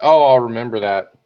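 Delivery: plain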